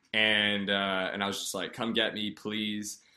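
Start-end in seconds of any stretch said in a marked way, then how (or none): 1.7-3.0 tearful, crying pleading voice. Retelling calling mom to be picked up: imitating own crying plea. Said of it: "I called my mom crying".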